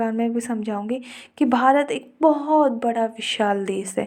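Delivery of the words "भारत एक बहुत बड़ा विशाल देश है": pitch rising and falling throughout. Giving a lesson plan example, with pitch moving high and low. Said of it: "मेरी पिच में कहीं पर हाई है तो कभी लो हो रही है".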